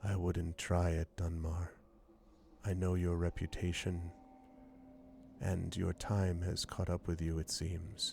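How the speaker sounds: quiet voice, kept soft and even. Narrating a figure holding a blade beside dunmar's neck, speaking in a quiet voice. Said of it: "a quiet voice".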